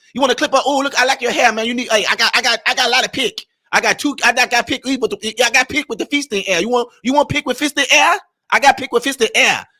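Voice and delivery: put-on Chinese accent with salesy tone. Describing shopkeepers greeting customers who come into their store, imitating a chinese accent. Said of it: "they still got their accent".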